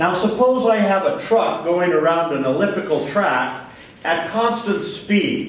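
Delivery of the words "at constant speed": emphasis on "speed", stretched out slowly. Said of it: "I emphasize that word speed".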